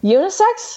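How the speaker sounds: high, rising, incredulous tone of total disbelief. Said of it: "I'm sitting there thinking".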